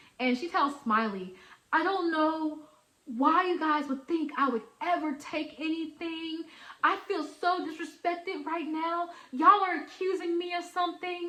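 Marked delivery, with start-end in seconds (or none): 1.7-11.3 play-acted, high-pitched, tearful sobbing and bawling. Retelling a coworker's words while she cried: imitating someone bawling. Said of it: "bawling her eyes out".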